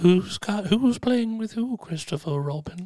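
put-on whisper. Retelling what a movie character says at the end: imitating Winnie the Pooh whispering. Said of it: "He whispers to him at the end".

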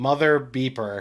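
yelling loudly. Speaker retelling his reaction on opening an email, retelling a loud yell. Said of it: "I might've yelled loudly".

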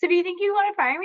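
very high, nervous, jittery, rushed squeak. Retelling asking the other speaker about firing: imitating nervous high-pitched voice. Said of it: "their voice gets really high pitched".

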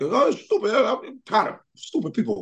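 put-on very high, feisty, griping old-man voice. Describing a comedian as an old feisty uncle: George Wallace impression. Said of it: "he just like an old feisty uncle".

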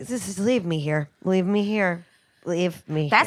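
put-on exhausted, weary pleading voice. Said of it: "I was so incredibly tired".

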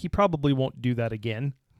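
ordinary talk

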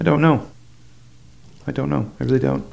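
tearful voice. Asked why they remember that moment, the speaker answers while crying. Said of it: "I don't know why I'm crying right now".

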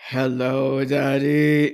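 guttural, dragged up from deep in the throat. Redoing the shadow baby's line after the others ask for it: deep guttural voice. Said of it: "this guttural".

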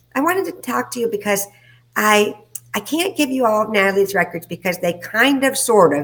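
put-on full Valley girl speech, high and swooping. Retelling a doctor's voice message: Valley girl voice imitating Doctor Lindy. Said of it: "sound like a Valley girl".

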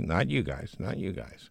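ordinary delivery

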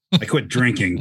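low, innocent-sounding voice with a mean edge. Repeating what a charming asshole said: retelling a benign, mean line. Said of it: "he said it in like the most benign, mean way possible".

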